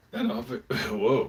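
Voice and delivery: voice cracks mid-word on avo-. Speaker talking about their breakfast, voice cracking. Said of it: "voice cracked".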